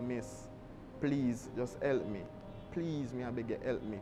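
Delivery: put-on crying, tearful pleading tone. Retelling begging a secretary at the Prime Minister's Office for help, retelling a crying plea. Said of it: "I start crying".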